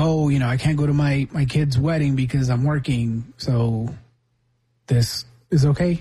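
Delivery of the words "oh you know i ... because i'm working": ordinary talk, nothing marked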